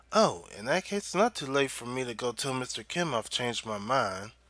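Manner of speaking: ordinary delivery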